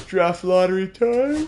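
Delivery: words stretched by yawning. After late editing the day before, the speaker announces draft lottery time, yawning. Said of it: "I'm really yawning".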